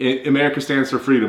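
ordinary delivery

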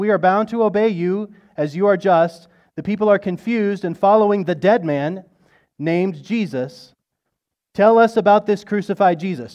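loud cry.

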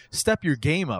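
usual speaking voice

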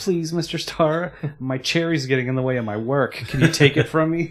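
high, loud, teasing, mocking pleading voice. Retelling how one character teases another: imitating a mocking plea. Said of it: "kinda makes fun of him".

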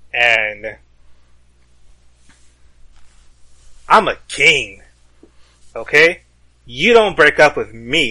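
loud, slow, obnoxious bragging. In a role-play, a player's character is being dumped with kids watching; loud, obnoxious boasting. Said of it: "saying this like as loudly and as obnoxiously".

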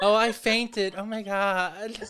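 put-on shrill, drawn-out girly-girl voice. Teasing another speaker about faking to get out of reading: mocking girly-girl voice. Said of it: "you're such a girly girl. Like".

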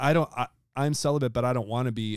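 plain

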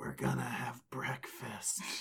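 whisper. Everyone asks for the Slayer as Dowling lies dying: Dowling whispering on death's doorstep. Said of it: "just whispers".

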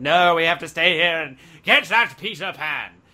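loud pirate captain voice. Retelling Hook's story, giving the captain's reply to his crew: Hook pirate voice. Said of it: "That was a good voice".

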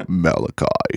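creepy, eerie, sinister spooky-sounding voice. Friends take turns saying a Bible book's name, each in a creepy voice. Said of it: "make it sound creepy".

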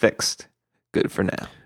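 voiceless, whispered, mock announcer-style delivery. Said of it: "they'll be like".

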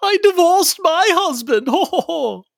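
very high, hoity-toity female voice. Quoting a classic line back to the group, in Jerry Nelson's hoity-toity female voice. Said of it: "I love that hoity-toity voice".

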